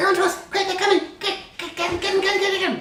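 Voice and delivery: very high, squeaky, weird creature chatter voice. Voicing a fleeing creature warning its allies: weird squeaking creature voice. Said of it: "this sort of weird squeaking noise".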